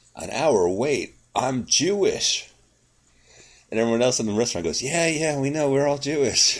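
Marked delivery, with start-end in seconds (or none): 0.2-2.5 mock very slow, loud, carrying, rising delivery. Retelling a restaurant story about a man told of an hour wait, retelling a loud outburst. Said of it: "he says rather loudly".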